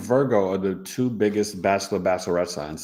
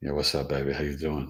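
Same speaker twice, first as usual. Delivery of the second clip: low, soft bass voice; 6 semitones lower, 6 dB quieter than usual. Retelling late-night phone talk with a wife: deep bass voice. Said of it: "I hit her with the bass".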